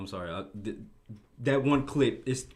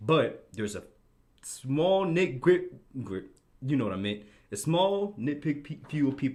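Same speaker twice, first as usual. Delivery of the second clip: stuttering, stumbling, repeating bits of words; 3 semitones higher than usual. Making a point about a small group of people, stuttering. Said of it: "Dang, I'm stuttering".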